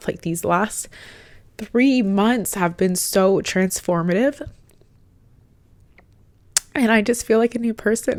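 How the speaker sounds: speaking through tears, tearful crying voice. Speaker thanks listeners for their kind words, crying while speaking. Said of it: "I don't know why I'm crying".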